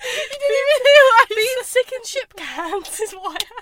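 high, loud, tearful laughter, squealed out. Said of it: "I'm crying".

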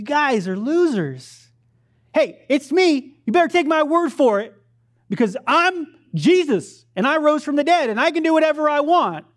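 put-on, high, hollered, yelling outburst. Acting out scolding the disciples as if he were Jesus: acted-out yelling. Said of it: "I'm yelling at him".

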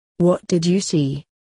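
plain

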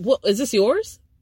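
ordinary talk, nothing marked

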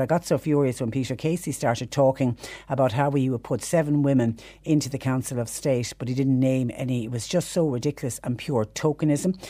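usual speaking voice

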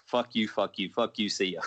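ordinary talk, nothing marked

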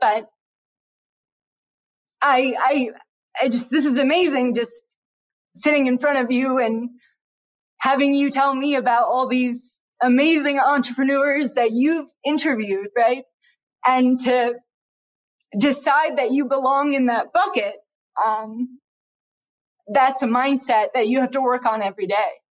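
on the verge of tears. Speaking to someone who has interviewed many entrepreneurs, tearing up. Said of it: "I'm like tearing up a little bit".

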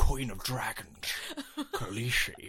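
slow, drawn-out voice with a swooping tune. Doing the one Game of Thrones voice they can: Jorah voice. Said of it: "the only voice I can do from Game of Thrones".

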